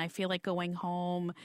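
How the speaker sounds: ordinary talk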